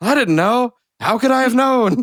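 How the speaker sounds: put-on shrill yell at a very high pitch. Describing a moment from Tremors 2, the speaker retells a character's yell. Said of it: "a character just yells".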